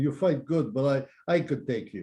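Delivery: put-on drunk Russian voice. Retelling a story where a Russian fighter goads the hot-shot guy, imitating a drunk Russian. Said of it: "the Russian guy's all drunk and he's going".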